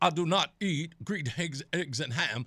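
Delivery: slow, deliberate, measured preacher voice, word by word. Imitating Jesse Jackson reading Green Eggs and Ham: Jesse Jackson preacher voice. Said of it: "It's the preacher voice".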